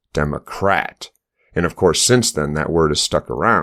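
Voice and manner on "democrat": Democrat with the weight leaned on rat. Explaining how the word was twisted, says democrat with stress on rat. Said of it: "we can put the emphasis on rat".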